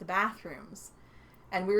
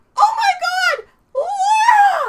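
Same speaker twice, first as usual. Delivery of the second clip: top-of-lungs yell, very loud, high, very slow, drawn-out; 15 dB louder than usual. Retelling someone's reaction on seeing another arrive: imitating a shout at the top of her lungs. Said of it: "at the top of her lungs".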